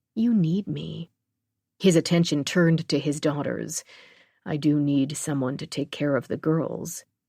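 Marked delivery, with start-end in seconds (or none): 0.2-1.1 sugary, sweet delivery. Narrator reading a woman's line to a man, sweet voice. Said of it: "In a sweet voice".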